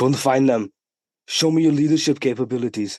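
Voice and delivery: put-on Austrian German accent. Retelling what a cigar-smoking man said to Bill Hader, in an Arnold Schwarzenegger accent. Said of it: "in the accent".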